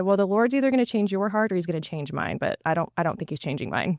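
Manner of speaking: normal talking voice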